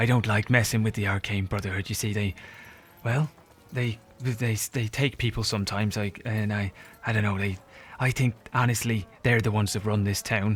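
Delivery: anxious whispering. Voicing a nervous informant who fears the arcane brotherhood: whispering nervously. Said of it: "he kind of whispers up".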